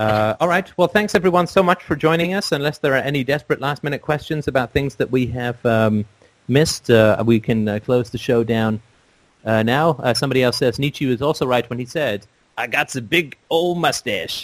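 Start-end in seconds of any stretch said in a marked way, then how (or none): 12.6-14.4 badly put-on, slow Texas drawl. Closing the show, jokingly quote Nietzsche in a bad Texas accent. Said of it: "I don't think he said it in a bad Texas accent".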